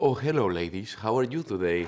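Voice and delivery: thick, exaggerated put-on Spanish accent in English. Explaining why women find an actor attractive: Antonio Banderas Spanish accent. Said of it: "It's the accent".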